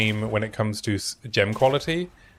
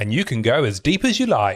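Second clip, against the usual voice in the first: terrible, bad put-on New Zealand accent. Pitching a channel-point soundbite idea, in a terrible New Zealand accent. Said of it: "That was a terrible New Zealand accent".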